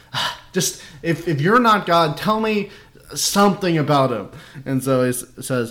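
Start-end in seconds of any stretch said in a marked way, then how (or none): 0.1-4.2 high, fed-up, exasperated, pleading voice. Retelling a reading, acting out a speaker who keeps asking things: imitating an exasperated plea. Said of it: "he's getting exasperated".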